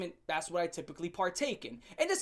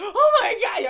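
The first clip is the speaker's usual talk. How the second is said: very high, very loud, shrill full-volume shriek; 14 semitones higher, 13 dB louder than usual. Retelling how she reacted when he picked up a dead bird, imitating her screaming. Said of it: "she started screaming".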